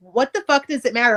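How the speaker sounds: ordinary delivery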